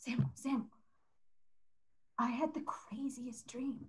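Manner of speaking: barely voiced, hushed, breathy, urgent whisper. Playing a character who runs to Samuel, whispering. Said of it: "she doesn't realize why she's whispering".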